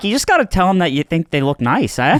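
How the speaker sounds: put-on Australian accent, demonstration style. Doing an accent bit for the group; Australian-sounding accent. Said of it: "That's Australian".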